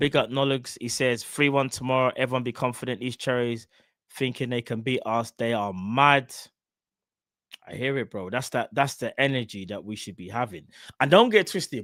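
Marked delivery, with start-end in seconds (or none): none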